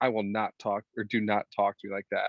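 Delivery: ordinary delivery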